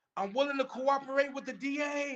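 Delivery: very high, loud call carrying across a room. Retelling a court story, what a cellmate shouted to the sheriff: imitating someone yelling. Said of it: "this dude started yelling out".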